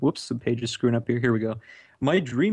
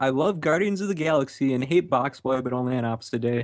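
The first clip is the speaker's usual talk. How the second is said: ordinary talk, nothing marked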